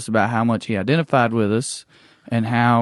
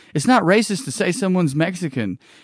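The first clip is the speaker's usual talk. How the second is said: plain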